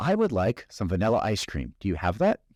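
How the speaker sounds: plain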